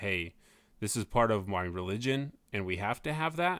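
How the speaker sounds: ordinary talk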